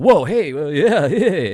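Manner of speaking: put-on little laugh. Retelling a slap heard on an interrogation recording: imitating someone laughing a little. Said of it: "he would kinda laugh a little bit".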